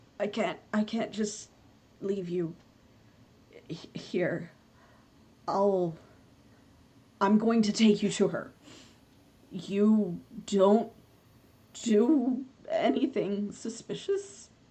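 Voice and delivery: voice slightly cracking at the edges. A game character insists on taking someone along, voice cracking a little. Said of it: "his voice is like cracking a little bit".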